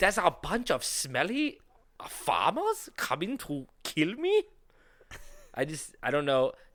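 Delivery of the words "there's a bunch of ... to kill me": clumsy, bad German accent, high and swooping. Retelling what a man in a history story said: bad german accent. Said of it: "I can't even do a fucking German accent".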